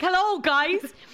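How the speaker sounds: shrill shout, pitched way up. Recounting how a man shouted a greeting at people, as a retold shout. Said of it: "he's obviously just shouted at them being like".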